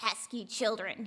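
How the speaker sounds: gruff voice. Reading a story aloud, voicing a sick old man's line: gruff voice. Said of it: "he said in a gruff voice".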